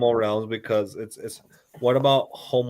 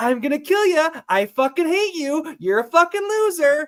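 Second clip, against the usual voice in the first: very high, swooping, cheerful, happy voice; 4 dB louder than usual. Showing how a dog still wags its tail at harsh words: happy voice to a dog. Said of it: "because you did the happy voice".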